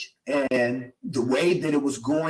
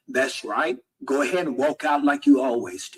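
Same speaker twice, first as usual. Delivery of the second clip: normal talking voice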